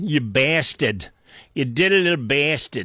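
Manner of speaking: put-on Boston accent. Ranting to the audience, then switching into a boston accent. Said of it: "I should be saying it with my Boston accent".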